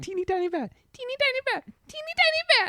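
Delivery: high, swooping chipmunk squeak. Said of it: "it gets higher pitched, like a chipmunk".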